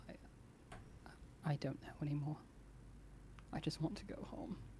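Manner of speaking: giving up, resigned. Narrating a game, the storyteller voices a character slumping against a companion; defeated, facade dropping. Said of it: "facade falls away and he just like slumps".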